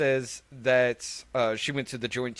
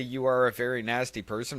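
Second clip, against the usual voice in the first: ordinary delivery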